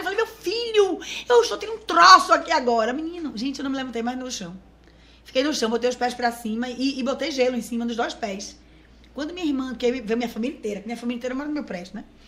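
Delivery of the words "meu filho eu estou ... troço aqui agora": shrill, high, loud yelling. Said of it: "comecei a gritar".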